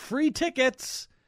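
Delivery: high, slow, mock screaming delivery.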